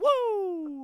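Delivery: very high, very loud, long, shrill wrestler's woo. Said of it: "the Nature Boy, Ric Flair".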